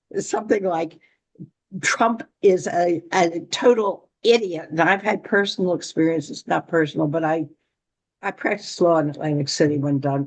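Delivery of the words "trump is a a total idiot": normal talking voice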